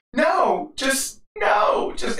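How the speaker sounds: play-acted, very slow, high, drawn-out tearful crying. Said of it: "she starts crying".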